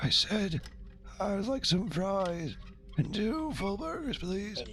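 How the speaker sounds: high, very soft, barely audible mumble.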